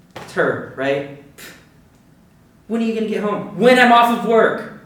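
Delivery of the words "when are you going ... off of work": loud, high-pitched snapping yell, patience gone. Venting to a friend about being questioned, yelling. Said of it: "Sorry for yelling".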